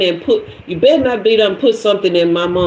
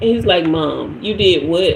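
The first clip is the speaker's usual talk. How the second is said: plain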